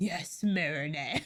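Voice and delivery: very low, way-too-serious, dead-serious voice. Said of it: "Tiki sounds way too serious".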